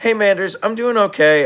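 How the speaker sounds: croaky, worn-out voice. Answering a viewer during a stream: wrecked hoarse voice. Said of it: "my voice is still wrecked".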